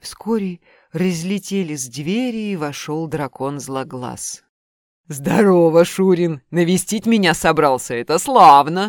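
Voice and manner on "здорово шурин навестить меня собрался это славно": booming, very loud, jeering, mocking roar. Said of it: "проревел он, насмешливо глядя на парня".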